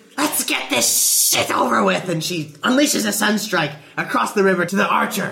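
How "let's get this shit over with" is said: words hissed out sharply, high and venomous. In a game, the player voices her Dragonborn before attacking: hissing. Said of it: "she hisses".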